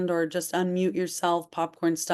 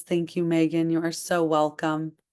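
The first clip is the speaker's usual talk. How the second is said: plain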